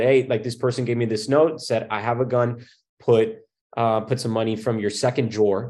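ordinary delivery

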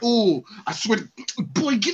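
put-on high, drawn-out, angry scolding voice. Imitating Alfred ready to scold someone: imitating an angry Alfred. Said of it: "He's ready to throw a chancla".

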